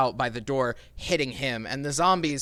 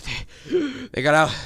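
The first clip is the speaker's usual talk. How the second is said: put-on wheezy rasp through words; 2 semitones higher, 4 dB louder than usual. Voicing a man just healed, still wheezing as he tries to speak, raspy wheezing voice. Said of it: "continues to wheeze as he tries".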